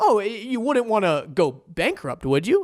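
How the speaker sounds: persuasive, leading, sing-song salesman tone. Demonstrating how someone sounds when persuading a listener, persuasive leading tone. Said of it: "the way that you sound".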